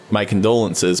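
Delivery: ordinary delivery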